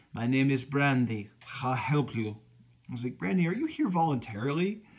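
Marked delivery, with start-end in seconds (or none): 0.2-2.4 put-on heavy Russian accent. Quoting a waitress at an Arby's, in a thick Russian accent. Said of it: "had a really thick Russian accent".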